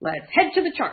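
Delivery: grand comic-book hero delivery. Coach announcing the move to the charts for viewers, in a superhero voice. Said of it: "in my best superhero voice".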